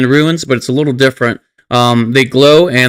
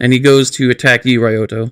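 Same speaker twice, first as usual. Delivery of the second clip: ordinary delivery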